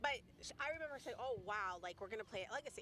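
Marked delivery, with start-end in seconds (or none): none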